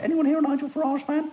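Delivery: voice suddenly shot very high. Putting a question to the people present, in a high-pitched voice. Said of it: "Don't know why I went so high pitch".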